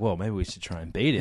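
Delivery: ordinary delivery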